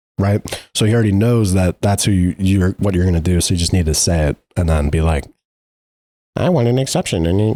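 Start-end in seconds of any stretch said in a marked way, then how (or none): 6.4-7.3 teasing, ribbing parody of a voice. Imitating how the other speaker would ask for an exception: imitating the other speaker. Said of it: "that's what you sound like".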